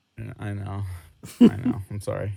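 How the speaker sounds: sounding sad. Teased for having no ginger friends, the speaker apologizes: sad. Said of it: "You sound so sad".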